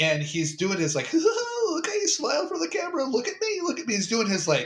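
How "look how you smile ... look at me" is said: goofy, very high-pitched villain voice. Imitating a movie villain torturing somebody on video: goofy Joker voice. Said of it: "goofy voice".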